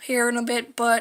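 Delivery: plain reading voice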